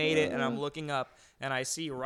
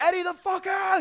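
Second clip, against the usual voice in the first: shrill, high, frantic, panicked screaming yell; 8 dB louder than usual. Retelling how a guy screamed at Eddie like an emergency, retelling a panicked scream. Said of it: "He's screaming like it's an emergency".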